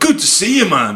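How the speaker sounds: put-on Dublin accent, very high pitched. Contrasting their own thick accents with how people in Dublin talk: Dublin accent. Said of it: "it's not like we're in Dublin going".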